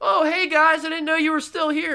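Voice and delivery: very high, screamed, acted-out shout. Retelling how she screamed up the stairs to people still in the house. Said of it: "she screams up the stairs".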